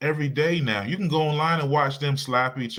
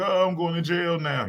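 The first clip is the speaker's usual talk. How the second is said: mock tearful voice, words spoken through crying; 4 semitones higher than usual. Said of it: "she crying like".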